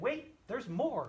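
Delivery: hyped-up infomercial announcer, tv pitchman voice. Describing TV commercials that offer more: imitating a TV commercial pitchman. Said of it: "I sound like one of those guys on those T V commercials".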